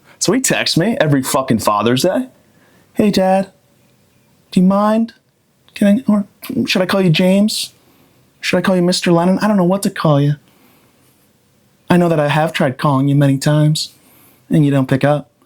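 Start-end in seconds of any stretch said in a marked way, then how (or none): 2.9-15.2 put-on timid voice, higher. A father mocks the texts his son sends every Father's Day, imitating a timid son. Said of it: "like you're timid".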